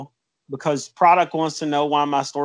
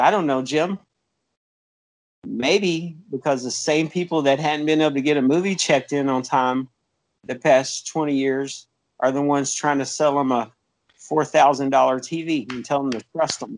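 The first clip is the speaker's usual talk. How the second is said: plain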